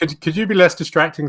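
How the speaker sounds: mocking, high and loud.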